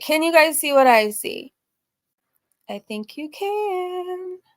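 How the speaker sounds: eerie, high, slow doll voice, drawn-out "can". Sharing the screen with viewers, creepy doll voice. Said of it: "I sounded like a creepy doll".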